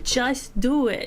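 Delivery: rousing, encouraging pep-talk delivery. Promising listeners to keep cheering them on: Shia LaBeouf impression. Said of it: "I'm gonna be your Shia LaBeouf".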